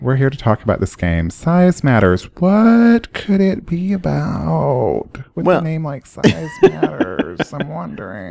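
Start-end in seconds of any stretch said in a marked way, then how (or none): 2.4-8.3 whiny, musing voice, high, swooping and slow. Introducing the game Size Matters to the others, in a whiny thinking voice. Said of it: "Why are you whining?".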